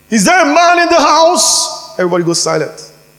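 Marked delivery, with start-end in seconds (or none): 0.1-1.9 put-on very high, booming, bellowing giant voice. Speaker acting out Goliath's challenge to Israel, in a loud Goliath voice. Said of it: "Goliath has a loud voice".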